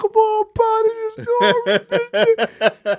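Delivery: drawn-out, very high, slow, teary pleading tone. Retelling begging his cousin at twelve to stay out, imitating a tearful plea. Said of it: "just tearing up".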